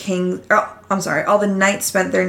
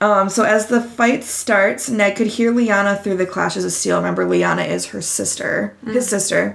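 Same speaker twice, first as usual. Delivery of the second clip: normal talking voice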